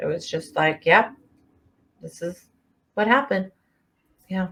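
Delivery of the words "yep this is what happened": put-on deadpan voice, flat with no emotion. Describing how a man told police what he'd done, retelling in a deadpan voice. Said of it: "in a very deadpan way".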